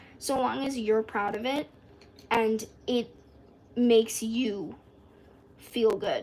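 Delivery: voice breaking mid-phrase. Speaking to viewers on their channel, voice cracking mid-sentence. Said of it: "Holy voice crack".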